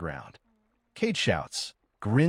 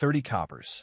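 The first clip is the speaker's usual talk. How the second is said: plain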